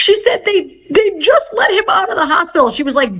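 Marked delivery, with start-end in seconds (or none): 0.4-2.7 mock bawling, high-pitched, frantic and panicked sobbing. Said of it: "bawling and frantic on the phone".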